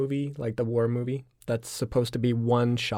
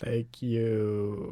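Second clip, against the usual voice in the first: terrible mechanical robot speech, you drawn out; 3 dB quieter than usual. Closing a podcast episode, a co-host signs off in a terrible robot voice. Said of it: "That was a terrible robot voice".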